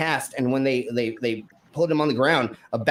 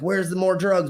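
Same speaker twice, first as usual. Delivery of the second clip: mock restrained, pitched-up yell in stern official style; 6 semitones higher than usual. Retelling how they yelled at a handcuffed man, retelling someone yelling. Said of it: "they're like yelling at him".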